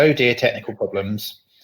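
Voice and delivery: ordinary talk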